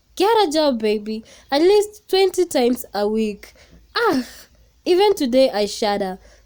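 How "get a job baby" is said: mock shouting, loud. Speaker retells the order a woman shouted at him many times a week, retelling a shout. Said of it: "she'd shout".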